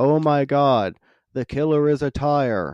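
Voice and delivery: heavy, mocking, sardonic sarcastic throwaway tone. Describing how a character says his line, retelling a sarcastic line. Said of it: "such a sarcastic way of just like".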